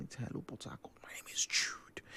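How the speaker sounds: soft, fully voiceless, playful whisper. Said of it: "you don't have to whisper it around".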